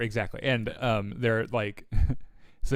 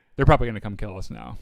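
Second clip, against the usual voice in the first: normal talking voice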